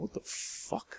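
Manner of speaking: hushed, very quiet, whispered mutter under the breath. Hearing a scream from outside, the dark-haired woman reacts, muttered. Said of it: "muttered the dark-haired woman".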